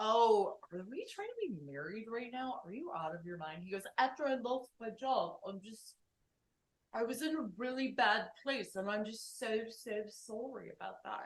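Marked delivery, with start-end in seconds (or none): 4.0-11.3 put-on British accent. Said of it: "he's British".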